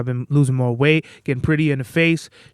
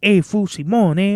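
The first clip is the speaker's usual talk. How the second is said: put-on voice, higher; 5 semitones higher than usual.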